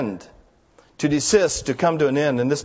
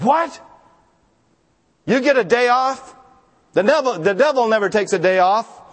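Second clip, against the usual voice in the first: put-on grumpy voice, higher and slower; 7 semitones higher than usual. Telling a joke, voicing the parishioner's reply to the preacher, mock-grumpy retelling. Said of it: "in a real grumpy tone".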